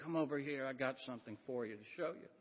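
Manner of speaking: soft, hushed, secretive and confiding stage whisper. Retelling how an usher called them over: imitating someone half-whispering. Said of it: "he whispered".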